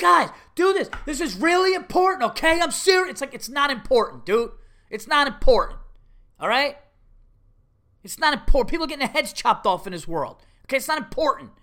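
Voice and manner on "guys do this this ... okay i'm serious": mock grown man yelling, high, pushed-up rant. Retelling how a guy yelled at the kids during a game: imitating a yelling guy. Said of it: "I'm just watching this guy yelling".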